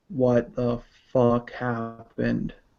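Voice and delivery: really deep, low, hushed voice. Narrating a scene, voicing a newly revealed figure addressing everyone, in a really deep voice. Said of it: "in a really deep voice".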